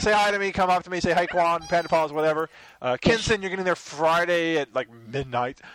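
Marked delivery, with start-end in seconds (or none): none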